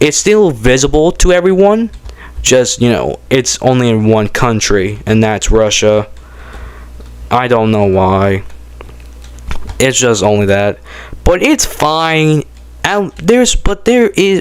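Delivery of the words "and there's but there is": stuttering, pitched-up stumble over words. Explaining something to viewers, stuttering. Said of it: "but I'm stuttering right now".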